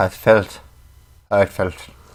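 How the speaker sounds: slow, put-on Irish accent. Saying a word from chat in an irish accent. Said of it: "Filth in the Irish accent".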